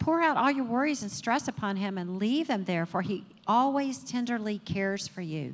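normal talking voice

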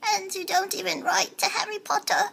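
house-elf character voice. Trading quick impressions one after another: Dobby impression. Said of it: "Dobby impression".

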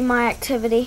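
ordinary talk

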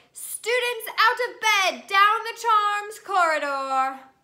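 high, very loud bellowing. Narrator reads Peeves' line after Ron swipes at him, bellowing. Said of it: "Peeves bellowed".

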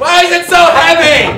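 worked-up, agitated, fast, frantic outburst. Acting out a christmas fight, being told to chill out: acting frantic and worked up. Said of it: "Just chill out".

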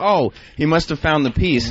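ordinary delivery

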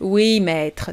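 put-on zombie voice. [name] answers Johnny after he tells the children to stay put, in a zombie voice. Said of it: "en prenant la voix de zombie".

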